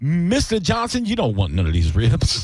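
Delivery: animated delivery with swooping pitch. Acting out the slave Clarence answering the owner: acting as the slave Clarence. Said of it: "And he's like".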